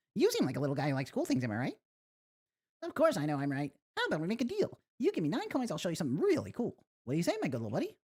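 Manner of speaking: swooping character voice. Voicing a game character who talks to the player, in a different character voice. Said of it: "so I should give this guy a different voice".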